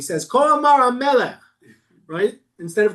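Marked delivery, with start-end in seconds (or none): 0.2-1.4 taunting, high, loud, mocking royal proclamation style. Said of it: "He's mocking him".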